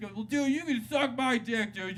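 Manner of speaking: mock heckling taunt, high, slow and drawn out.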